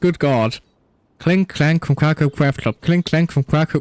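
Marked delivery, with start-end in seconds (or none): 1.2-3.8 rapid-fire tongue-twister repetition, much faster. Speaker tries to say a hard name three times fast, fast tongue twister. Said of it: "Try saying that 3 times fast".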